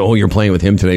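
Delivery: ordinary talk, nothing marked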